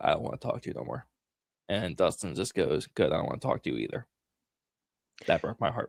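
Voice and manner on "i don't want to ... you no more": whispered, hushed, barely voiced. Retelling what Steve whispered amid the others' bickering, retelling a whispered line.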